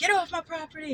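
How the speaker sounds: shrill, very high, angry put-on scream. Retelling how a man got up and screamed at boys at his cabin door: retelling a scream. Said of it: "gets up and screams at them".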